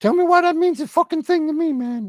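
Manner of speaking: very high, mouthy, rude ventriloquist's dummy voice. A ventriloquist's puppet talks back to its ventriloquist, in a bad ventriloquist puppet voice. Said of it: "I'm the world's worst ventriloquist".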